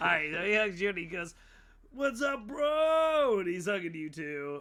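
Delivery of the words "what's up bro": very high bro-hippie voice with bro stretched out. Voicing the same mole man hugging a player: bro hippie voice. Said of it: "He's a bro hippie".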